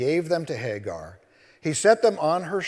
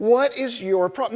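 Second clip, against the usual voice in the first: put-on tone with an edge; 8 semitones higher than usual. Retelling the angel's question to Hagar: imitating the angel's edgy tone. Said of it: "What he said has an edge on it".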